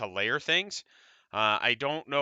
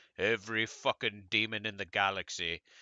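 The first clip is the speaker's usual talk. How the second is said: atrocious put-on English accent; 5 semitones lower, 6 dB quieter than usual. Quoting a favorite Game of Thrones scene: atrocious English accent as the Hound. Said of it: "my atrocious accent".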